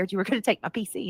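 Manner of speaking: ordinary talk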